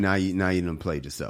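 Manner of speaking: normal talking voice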